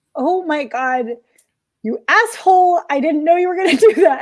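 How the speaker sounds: talking through tears and sobs. Reacting when told to pay the money back for another session, crying. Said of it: "And now I'm crying".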